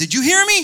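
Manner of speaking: shrill, very high, very loud scream. Retelling how the man screamed again in his ear: imitating someone screaming. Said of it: "and he screamed again".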